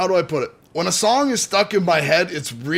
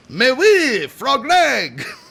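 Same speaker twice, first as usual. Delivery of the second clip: put-on, pitched-up French Canadian accent; 6 semitones higher than usual. Answering a co-host's request to hear it, in a French Canadian accent. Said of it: "Let me hear your French Canadian accent".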